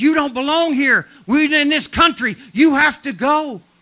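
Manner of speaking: huge, very loud, high-pitched demonic roar. Retelling a demon-possessed man cursing the speaker's group, in a big demonic voice. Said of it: "it's a big demonic voice".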